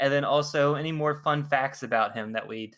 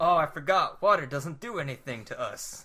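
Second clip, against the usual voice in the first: put-on Southern accent. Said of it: "he always talks like, like a Southerner".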